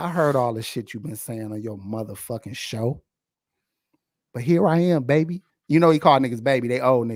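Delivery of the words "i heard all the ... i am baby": put-on threatening man voice, lower. Retelling how a tall man leaned in on someone: imitating a threatening man. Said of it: "imagine how threatening that is".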